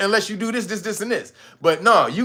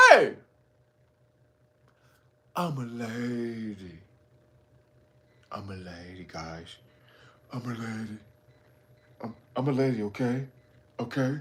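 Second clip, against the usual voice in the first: very low, slow, deep drawl, "lady" stretched out; 10 semitones lower, 11 dB quieter than usual. Retelling a movie plot where a drug kingpin announces he's a lady: imitating a drug kingpin.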